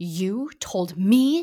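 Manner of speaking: hissing voice. A narrator reads a character's retort to another character; hissing. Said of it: "Voldemort hissed".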